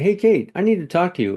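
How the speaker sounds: urgent, worried tone.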